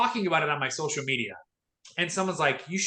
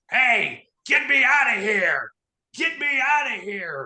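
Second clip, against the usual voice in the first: loud, rough, gravelly adult voice, pitched up; 6 semitones higher, 6 dB louder than usual. Retelling a voice yelling from inside the car trunk, in a full-grown gravelly voice. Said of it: "a full grown, gravelly voice saying".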